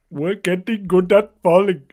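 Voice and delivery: loud put-on Pakistani English accent. Reading a script line when asked: put-on Pakistani accent. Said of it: "this line in your best Pakistani accent".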